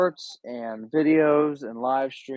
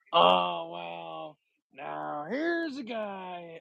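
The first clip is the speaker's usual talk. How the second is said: put-on football announcer voice, higher and quieter; 5 semitones higher, 5 dB quieter than usual. Doing a promised impression for the other speaker: Chris Collinsworth impression. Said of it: "Chris Collinsworth impression".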